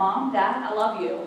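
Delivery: ordinary talk, nothing marked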